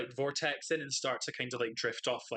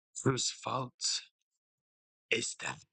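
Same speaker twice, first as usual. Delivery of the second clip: eerie, spooky put-on voice. Playing a character, the speaker answers in a spooky voice. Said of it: "It's a spooky voice".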